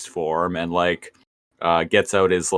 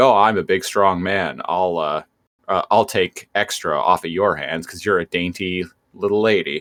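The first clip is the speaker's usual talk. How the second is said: ordinary talk, nothing marked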